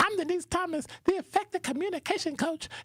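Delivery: high, squeaky, silly put-on voice. Introducing herself for the radio show in a voice: high, squeaky put-on voice. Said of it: "I got to say it with a voice like".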